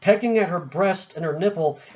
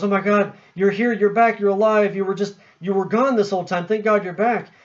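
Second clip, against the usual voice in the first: put-on, overcome, weeping, tearful breakdown cry; 3 semitones higher than usual. Retelling a film scene where a mother sees her dead sons: imitating someone breaking down crying. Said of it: "she breaks down and she goes".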